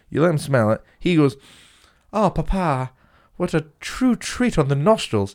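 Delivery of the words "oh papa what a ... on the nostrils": slow, high, put-on posh upper-class English accent. A boy sniffing a flower with his dad, posh Tory accent. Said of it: "Where's he getting this fucking accent from?".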